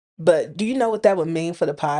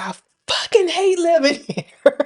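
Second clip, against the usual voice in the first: high-pitched yelled outburst. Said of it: "I literally yelled it".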